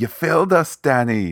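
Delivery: put-on English accent. Recapping a story, voicing a reproach to the hero, in an english accent. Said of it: "That's my spot-on English accent".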